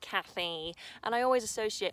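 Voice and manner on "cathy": grating, irritating put-on voice. Imitating how a friend used to say Cathy, annoying voice on Cathy. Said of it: "he'd always say it in a really annoying voice, like".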